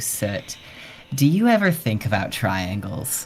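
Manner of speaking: words bubbling with laughs, spoken through laughter. Voicing the first thing a player hears: laughing voice of Chuckles. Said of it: "a laughing voice asking you".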